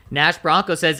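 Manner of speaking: normal talking voice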